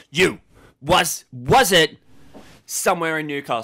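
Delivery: loud, demanding interrogator voice. Role-playing an interrogation of the others about a location: interrogating. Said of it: "interrogating them".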